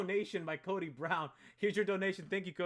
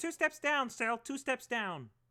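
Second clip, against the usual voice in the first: high-pitched puppet frog voice; 6 semitones higher than usual. Showing the planned line before recording: Kermit the Frog voice. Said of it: "And then Kermit's gonna be like".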